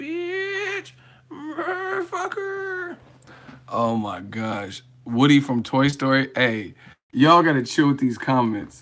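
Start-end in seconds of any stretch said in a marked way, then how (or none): 0.0-3.0 very high screech like brakes, bitch stretched out. Act out a comment with exaggerated words, imitating a car screeching to a halt. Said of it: "sound like a car coming to a screeching halt".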